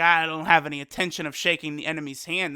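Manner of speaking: normal talking voice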